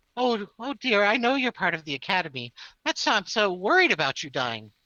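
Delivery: said with a smile coming through. A game master voices a character who looks at a player, smiling while speaking. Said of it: "she smiles and she says".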